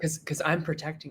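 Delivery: creepy, soft mock cult-leader tone. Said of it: "cult leader kind of vibes".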